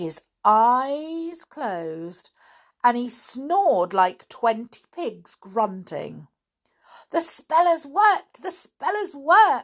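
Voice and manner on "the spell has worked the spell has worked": shrill, very high, loud, thrilled excited cry. As the wizard falls asleep snoring, giving an excited cry. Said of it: "jumping about in excitement".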